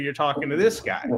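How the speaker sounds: plain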